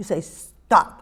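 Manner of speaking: short, sharp, low, clipped delivery. Showing the tone for correcting a dog, sharp, lower command tone. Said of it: "It's sharp".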